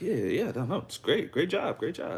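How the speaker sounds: gentle, soft, very high, encouraging and reassuring. Showing how the speaker talks to training clients: soft, reassuring voice. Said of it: "I speak to them softly".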